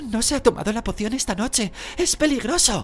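very high, breathless, breath catching in bursts, broken. Narrator reading a character's cry as a figure starts trembling, halting, broken voice. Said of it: "dijo Hermión con voz entrecortada".

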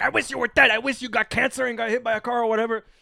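full-on dramatic yelling. Retelling a scene from Marriage Story: imitating Adam Driver yelling. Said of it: "Adam Driver starts yelling at Scarlett Johansson".

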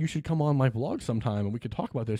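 ordinary talk, nothing marked

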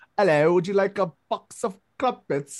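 put-on high voice, British accent laid on thick. Describing how a guy's voice sounds today, mimicking it in an extra british accent. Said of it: "very like like extra British".

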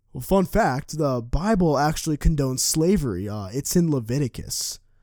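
ordinary talk

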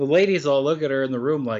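ordinary talk, nothing marked

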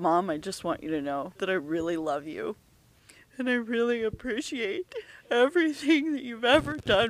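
high, tearful, acted crying voice. A mother retells a phone call from her son, imitating someone in tears. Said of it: "And he's in tears".

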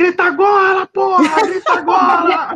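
put-on very high, drawn-out, gloating, jeering shout. Retelling a match where the rival neighbour went quiet: imitating himself shouting. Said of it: "Aí eu comecei a gritar".

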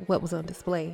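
plain reading voice

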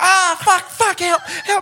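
mock shrill, long stretched-out screaming. Telling of a man whose ponytail got stuck under a car, retelling someone screaming for help. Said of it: "he's screaming".

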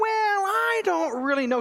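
very high, smooth, slick sarcastic needling. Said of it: "he puts that sarcasm that".

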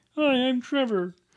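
high frog puppet character voice. Asking the other speaker whether he can approach a girl with a Kermit voice. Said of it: "just do a Kermit voice randomly".

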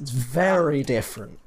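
sarcastic voice. Demonstrating their sarcastic voice after insisting they talk plainly, sarcastic voice. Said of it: "This is my sarcastic voice".

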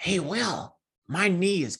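scruffy smoker's voice. Retelling Tanya coming back from a cigarette, in Tanya's scruffy voice. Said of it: "I will never forget her scruffy voice".

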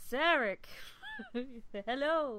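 swooping put-on starship captain character voice. Retelling a scene where Picard greets Sarek: Picard impression. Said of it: "Your impersonation of Picard is spot on".

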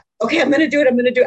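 acted crying while laughing. Retelling stepping forward and back in front of a guy, mock crying and laughing. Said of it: "I'm like literally crying and laughing".

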